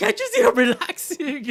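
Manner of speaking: very high, very loud, drawn-out angry cry. Quoting a favorite cartoon line: imitating angry Frida. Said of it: "she's, like, angry".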